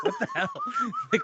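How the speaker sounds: very high-pitched, laughing, disbelieving voice.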